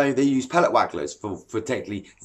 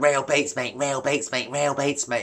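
cheesy, cringy show-off voice, repeated; 2 semitones higher than usual. Mimicking a mate who plugs a bait brand on every page: mocking a cringy angler. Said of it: "it's cringy, guys".

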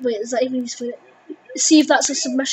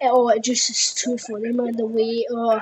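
ordinary talk

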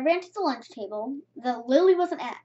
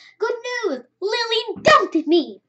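cheerful, happy, raised exclamation; 7 semitones higher, 5 dB louder than usual. Peter, grabbing Tessa's arm, tells her his news: happy. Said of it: "He said happily".

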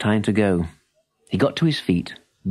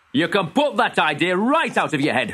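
sharp, pitched-up snapping voice; 9 semitones higher than usual. A father answers his son's hope of keeping a horse; snapped. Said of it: "snapped his father".

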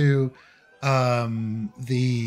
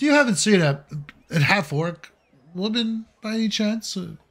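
genteel gentleman voice, much higher; 7 semitones higher than usual. A wounded gentleman in a tabletop game asks after his assistant, genteel gentleman voice.

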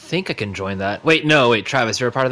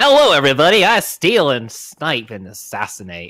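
loud, swooping fantasy rogue character voice; 4 semitones higher, 5 dB louder than usual. A player, retrying after a failed attempt, speaks as the rogue in a rogue voice. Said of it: "good rogue voice".

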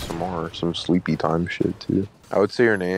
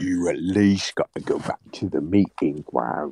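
English-sounding British accent throughout. Telling another player to go back to the meeting ground: british accent. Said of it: "you sound so British".

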